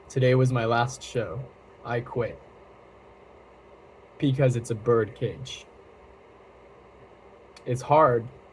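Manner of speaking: speaking through tears, voice breaking. Explaining why they quit after their last show, crying while speaking. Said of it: "Sorry, I keep crying today".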